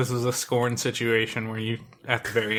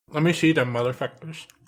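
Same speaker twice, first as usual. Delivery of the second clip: talking with mouth full of food, higher; 4 semitones higher than usual. Asking to see the chips another speaker mentioned, talking with mouth full. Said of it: "I got mouthful of chips".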